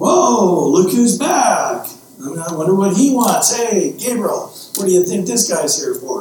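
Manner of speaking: heavy put-on sarcasm in swooping sing-song. Acting out the Lord's words to a returning sinner, mock-sarcastic. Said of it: "the Lord just started to get sarcastic".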